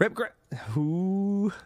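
laughing while talking. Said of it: "Then why are you laughing?".

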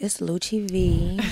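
put-on sultry, sexy, seductive delivery. Giving her own name and handles, doing it in a Chella voice. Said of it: "I want to do mine in a Chella voice".

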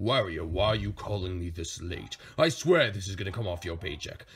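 annoyed voice, low and soft, grumbling.

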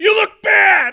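shrill, very high, loud shouted yell. Acting out a blunt answer to "how do I look": pretend yelling. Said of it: "'cause you have to yell it".

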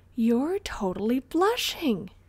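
giggling, teasing tone. A girl teases a boy about blushing, leaning in to see his face, giggling. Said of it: "Ashlynn giggled".

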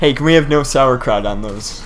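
ordinary talk, nothing marked

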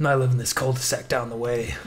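put-on gruff voice. Voicing Robert walking home from the bar with the narrator: gruff Robert voice. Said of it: "this guy's mysterious and cool. ... that [name] has a gruff charm to him".

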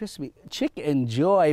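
ordinary delivery

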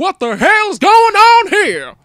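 put-on very high, shrill, loud, slightly country accent. Retelling a scene where Nick Fury reacts, Nick Fury a bit country. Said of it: "I make him sound a little bit country".

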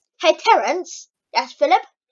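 put-on Canadian accent. Giving an example of a Canadian accent from South Park: Terrance and Phillip Canadian accent. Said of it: "That's a Canadian accent".

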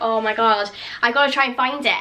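normal talking voice

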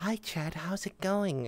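sensual seductive voice. Explaining that sex sells, demonstrating a sensual voice. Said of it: "People like a sensual voice talking to them".

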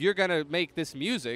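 plain

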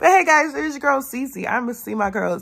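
super hyper, high-pitched, energetic voice. Speaker greeting her viewers before a weekend with her girls: super hyper. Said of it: "if you can't tell, I'm super hyper".

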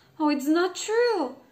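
sudden, high exclamation, crying out. Narrator reading the princess answering the frog, crying out. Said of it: "cried the princess".

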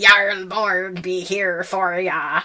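loud, butchered, bad pirate accent. Co-host announcing a name from a Viking episode to listeners, pirate voice. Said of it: "I always want to say that like a pirate".

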